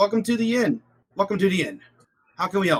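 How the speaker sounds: high, over-eager, overly excited voice. Narrating, the speaker voices an innkeeper couple welcoming the group, overly excited. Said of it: "They seem overly excited".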